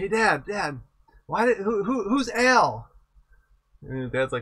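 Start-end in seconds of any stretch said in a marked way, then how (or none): 0.0-2.9 play-acted child voice, high and loud, shouting. Retelling a kid at a soccer game calling to his dad: imitating a kid shouting. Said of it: "he's shouting to his dad".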